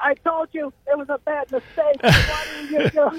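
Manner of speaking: put-on piercing, shrill scream, very high. Retelling what a man screamed the whole time, retelling a scream. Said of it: "he screamed".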